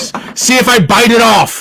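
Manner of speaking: very high, shrill, furious raging shout. A character in a tavern confronts someone pointing a finger, angry yelling. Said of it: "really no need to yell in the tavern".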